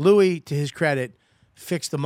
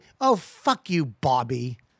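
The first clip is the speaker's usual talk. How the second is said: play-acted very slow, drawn-out, rude jab; 2 semitones lower than usual. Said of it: "that's the way".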